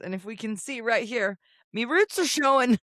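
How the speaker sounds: high, put-on Irish accent. Correcting a co-host's claim about them, in an Irish accent. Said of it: "Did you just say that in an Irish accent?".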